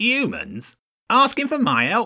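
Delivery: very high, shrill, swooping, scornful sneer. Narrator reads Lord Ratzenberg answering James's request for help, sneering. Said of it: "Lord Ratzenberg sneered".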